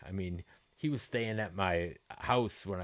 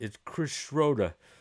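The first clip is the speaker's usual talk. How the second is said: rough, put-on Boston accent, loud and high; 6 semitones higher, 5 dB louder than usual. Retelling how a future bandmate told his name, imitate Chris Schroeder's Boston accent. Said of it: "I can't do a good Boston accent".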